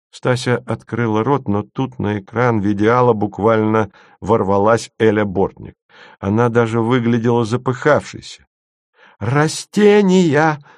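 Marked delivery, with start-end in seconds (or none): 9.2-10.5 sudden blurted high shout, no lead-in. Elya bursts onto the video screen without preamble, shouting. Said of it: "закричала Эля".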